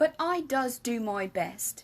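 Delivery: plain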